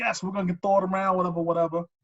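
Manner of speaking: thrilled, can't-wait, super excited eager outburst. Retelling how he came back with the football, imitating someone super excited. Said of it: "like super excited".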